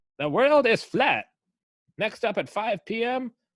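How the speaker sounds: put-on Mid-Atlantic announcer accent. Mocking how a fifteen-hundreds European character sounds in a play, in a 1930s Mid-Atlantic radio voice. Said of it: "has a nineteen thirties Mid Atlantic radio voice".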